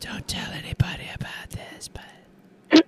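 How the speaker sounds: quiet whispering. Joining in on a campfire tale, whispering. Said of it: "why are we whispering?".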